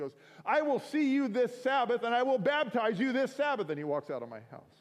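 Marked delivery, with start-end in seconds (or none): 0.4-3.7 mock stern, furious outburst, very high and loud. Retelling a man who got mad at him and stomped his foot, mock-angry. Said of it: "he gets mad at me and he stomps his foot".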